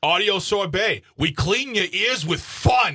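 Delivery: worn-off New York accent. Introducing the show's audio sorbet segment, in a faded new york accent. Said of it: "It's like a guy who moved out of New York like 30 years ago".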